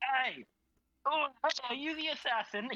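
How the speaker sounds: really high-pitched, squeaky little put-on voice. Imagining a bystander's reaction while playing the game: really high-pitched voice. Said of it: "He just has like a really high pitched voice".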